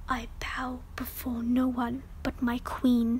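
hushed whisper in a low voice. A captive answers his captors, in a low whisper. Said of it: "Rusted chains are wrapped around his gaunt legs, arms and neck so tightly they cut into his skin. His clothes are tattered and blood-drenched, and his face is a mottled mess of broken bones and torn skin. ... Ampelia whispers, tripping over the hard edges of the Calavaxian language. Despite his low".

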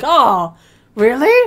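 loud, swooping, played-up put-on astonishment. Mocking the other speaker's reaction to the end: mock surprise. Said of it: "I'm not gonna act all surprised like you".

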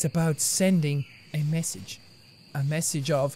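very low, quiet put-on voice. Streamer mid-game, narrating to viewers, in a low voice. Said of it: "*low voice*".

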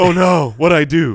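very slow, anxious, alarmed, startled gasp. Imitating frightened listeners who hear the host: imitating a worried listener.

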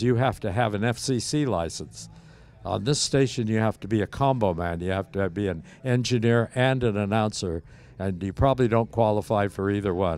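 ordinary talk

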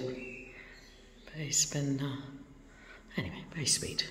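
soft whisper. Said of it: "don't know why I'm whispering".

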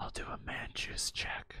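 hushed whisper. Acting out a dying character's last words in a boss battle: whispering. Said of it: "And he whispers".

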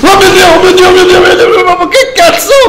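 frightened shriek. Streaming a game, suddenly frightened by something: startled scream. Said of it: "Mi è venuto un infarto come non so cosa".

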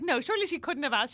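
ordinary talk, nothing marked

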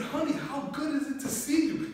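very high, gushing, overly sweet voice.

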